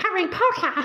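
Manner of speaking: very high-pitched, piping little creature voice. Reading aloud, a creature greets harry by name in a high-pitched voice. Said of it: "a high pitched voice Harry was sure would carry".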